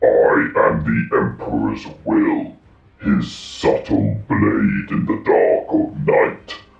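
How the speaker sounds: very low, rough, grinding, processed machine voice. Describing a game battle, the speaker speaks as the Contemptor in Dreadnought voice. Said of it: "I found a Dreadnought voice mod".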